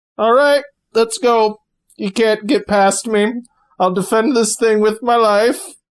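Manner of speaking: put-on croaky elderly voice. Game narrator voices an old man who drops his cane, croaky old man voice. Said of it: "you hear like a croaky old voice".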